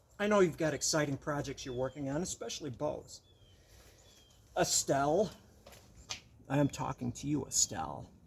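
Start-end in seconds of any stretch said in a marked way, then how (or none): 4.6-8.1 eerie, menacing, creepiest unsettling voice. Speaker talking directly to Estelle: creepiest voice. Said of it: "in my creepiest voice".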